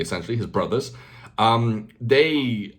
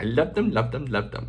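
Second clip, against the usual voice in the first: babyish, put-on childlike kid voice. Repeating the earlier line on purpose: repeating in a put-on childlike voice. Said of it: "I sound like a child".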